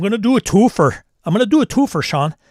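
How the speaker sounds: Minnesota accent. Asked for a Minnesota accent, announcing a double game pick in a Minnesota accent. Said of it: "your best Minnesota accent".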